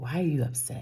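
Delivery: put-on very heavy Nigerian accent, laid on thick. Retelling what a woman said to her when they left, in a thick Nigerian accent. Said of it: "In her very thick Nigerian accent".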